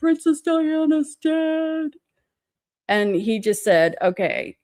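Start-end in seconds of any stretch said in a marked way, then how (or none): 0.0-1.9 sobbing, high, tearful crying voice. Girls pulled over by a cop answer him, imitating crying. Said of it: "and we're all crying".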